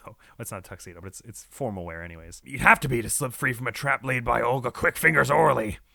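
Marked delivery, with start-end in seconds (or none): 2.4-5.8 put-on pirate voice. Voicing a witness who looks like a pirate: pirate voice. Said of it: "that's why I'm giving her this voice".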